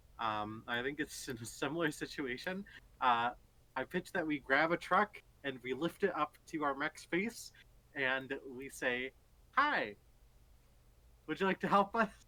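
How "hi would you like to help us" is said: innocent, playful, naive, pitched up. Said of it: "playful and naive".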